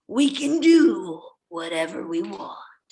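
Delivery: deep, big-screen cinematic film-style line delivery. Asked by the other speaker to redo the quote: most cinematic voice. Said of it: "try to do your most cinematic voice".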